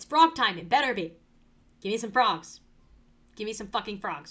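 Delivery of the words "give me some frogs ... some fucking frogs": faking anger, playful. Player waiting for a new Minecraft world to load, mock angry. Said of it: "I'm big angry".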